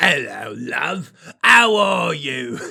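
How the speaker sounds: booming, loud, slow, fake put-on English accent. Retelling a dating app exchange, the speaker voices a message in a put-on English accent. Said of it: "why we're doing the fucking accent".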